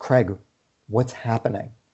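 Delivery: put-on scared, pained, fearful voice. Retelling his wife picking up his call, imitating her pained, fearful voice. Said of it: "the pain in her voice and the fear in her voice".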